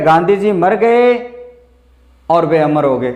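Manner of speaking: brief pause following मर गए. Reading a sentence with a clause: short pause after mar gaye. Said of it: "बस इतना break देना आपको यहां पे".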